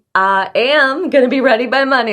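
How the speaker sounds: emphatic, energized, high and deliberate delivery. Coaching a caller to say a goal out loud: more energy. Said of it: "A little more energy".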